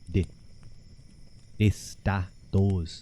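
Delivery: slow, breathy, whispered Dublin accent, th as d. Speaker demonstrating how the th sound becomes d, in a Dublin accent. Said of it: "That's more of a Dublin".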